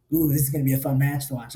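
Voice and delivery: acted-out smug, cocky, needling, teasing tone. Retelling what someone said before a match: imitating Kevin Sherrill smirking. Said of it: "stands there with this little smirk on his face".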